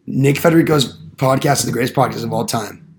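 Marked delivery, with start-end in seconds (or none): none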